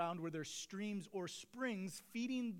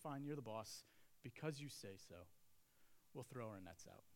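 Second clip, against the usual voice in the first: put-on resignation, lower, much quieter; 8 semitones lower, 11 dB quieter than usual. A speaker acting out Peter's reply, mock-resigned and grudging. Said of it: "There's some resignation in Peter's voice".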